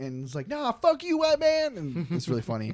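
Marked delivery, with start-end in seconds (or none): 0.5-1.8 mock shrill yell, very high. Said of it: "yelling obscenities outside".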